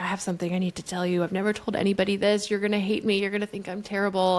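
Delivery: put-on tearful, crying voice. Retelling how a partner confessed a secret while crying: imitating Beecher crying. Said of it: "just starts crying, like, crying really hard".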